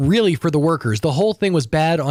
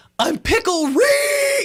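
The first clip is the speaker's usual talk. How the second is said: very high, shrill scream with one word drawn out. Retelling a fan running in with a shirt on his head, imitating screaming. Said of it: "he's screaming out".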